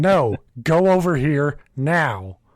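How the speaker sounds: slow, drawn-out, commanding yell. Showing how to yell at a large number of kids: imitating yelling at kids. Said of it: "yell at 'em like".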